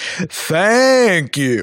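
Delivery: lightly sarcastic, not quite sincere reading. Reading out a supporter's message, put-on sarcastic tone. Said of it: "It sounded sarcastic".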